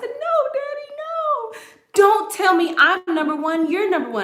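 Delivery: play-acted, very high, pleading, tearful crying voice. Retelling a childhood argument with Daddy: imitating own past crying. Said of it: "one time I started crying".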